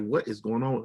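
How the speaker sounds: usual speaking voice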